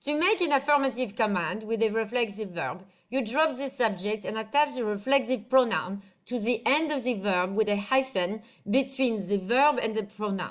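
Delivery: French-accented English. French teacher explaining grammar to students, in a french accent. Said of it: "let me do a French accent".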